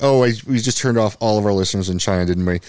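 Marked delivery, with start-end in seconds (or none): none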